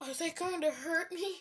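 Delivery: acted scared, nervous tone. Acting out an imagined Naruto scene, the speaker voices another person; imitating Manuel getting scared. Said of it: "As Manuel would get scared".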